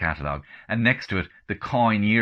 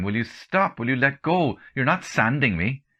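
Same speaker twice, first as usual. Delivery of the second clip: high-pitched shout through laughter; 6 semitones higher than usual. Retelling telling someone to stop while drying hair: laughing and shouting. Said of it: "I'm laughing and shouting at him at the same time".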